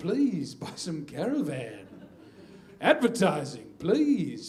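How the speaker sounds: beautiful, rich, slow radio-presenter broadcaster voice. Retelling how a coworker spoke to people on the phone: imitating a rich voice. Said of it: "he had this beautiful, rich voice".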